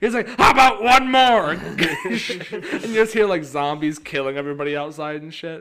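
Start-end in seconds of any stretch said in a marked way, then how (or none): 0.3-1.5 ear-splitting, shrill, very loud shrieked scream. Retelling how a man kept asking for one more ding of a bell, imitating someone screaming. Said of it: "every time he's just screaming".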